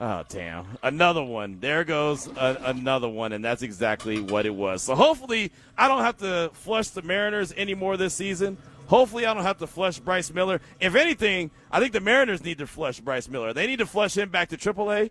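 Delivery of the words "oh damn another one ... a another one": ordinary talk, nothing marked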